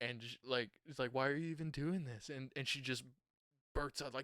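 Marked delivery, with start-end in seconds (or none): 1.1-2.3 snide, needling, sarcastic and mean. Retelling a movie scene where a character interviews another: imitating a sarcastic mean question. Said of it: "sarcastically and being real mean to her".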